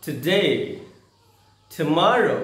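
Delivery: English-accented pronunciation. Teaching how to pronounce English words: English accent. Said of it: "बेहतर है थोड़ा एक्सेंट में बोले".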